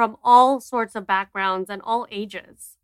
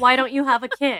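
ordinary delivery

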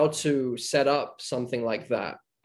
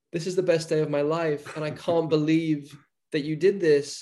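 mock crying, put-on tearful voice; 3 semitones higher than usual. Retelling what someone said after the first take: imitating someone crying. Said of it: "she was, like, crying".

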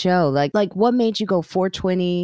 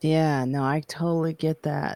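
fake stoner drawl, quieter; 3 semitones lower, 5 dB quieter than usual. Agreeing with another speaker about working high: put-on stoner voice. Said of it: "I'm saying it like a stoner".

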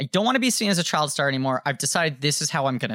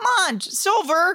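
squeaky, very high-pitched voice; 3 dB louder than usual. Imitating a former child star's line in an animated film, squeaky voice. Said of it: "he was very squeaky voiced".

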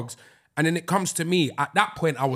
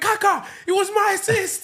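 mock very high-pitched, giddy, bursting with excitement. Retelling running up to the player he assisted, acting out past excitement. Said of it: "I was so excited".

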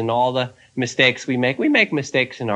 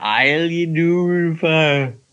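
mock slurred words, very slow, pitched up; 5 semitones higher than usual. Recounting how a man answered when asked how he was, imitating slurred speech. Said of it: "And he slurred".

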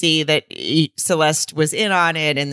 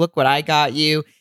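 ordinary talk, nothing marked

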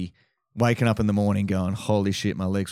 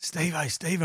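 hushed, pitched-up half-whisper; 8 semitones higher, 5 dB quieter than usual. Retelling trying to get a friend's attention unnoticed: half-whispering. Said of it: "I'm whispering at him".

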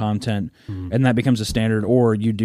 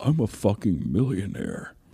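put-on whisper, quieter; 5 dB quieter than usual. Imitating what a cartoon Markiplier keeps whispering in your ear: whispering as Markiplier. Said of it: "That's what he keeps whispering in your ear".

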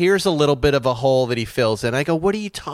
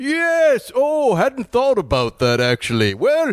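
cheery, jolly, pitched-up festive gift-bringer voice; 10 semitones higher than usual. Making the kids laugh, answering a question as Santa Claus, in a Santa Claus voice. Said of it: "He goes".

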